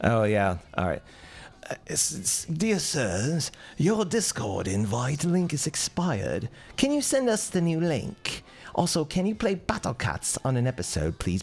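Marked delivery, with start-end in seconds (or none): 1.9-11.4 slow, high, put-on British accent, read aloud. Reading someone's message aloud on request, in a put-on British accent. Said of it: "read this in a British voice".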